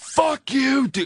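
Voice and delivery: put-on very high-pitched, shrill drunken screaming. Recounting a drunken night, yelling at friends to leave; retelling a scream. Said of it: "I'm screaming".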